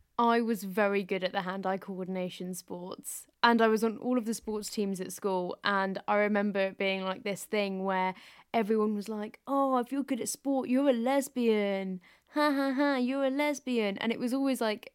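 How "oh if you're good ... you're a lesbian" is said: put-on nasty mocking jeer, higher pitch. Retelling what schoolmates said about being good at sport: imitating a horrible derogatory taunt. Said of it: "said in a really horrible, derogatory way".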